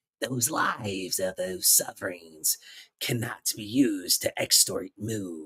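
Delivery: low, hushed, evil, slithering snake voice. Showing how the voice actor should have delivered the line, evil sinister snake voice. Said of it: "like that evil, sinis- sinister, like snake voice".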